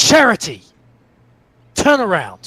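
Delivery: shouting out. Calling out to a companion to turn around, yelling out. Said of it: "Yell out".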